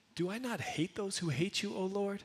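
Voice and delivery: inquisitive, wondering aloud. Rereading David's verse as a genuine question: inquisitive, wondering tone. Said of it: "with this tone of voice. ... More of this inquisitive".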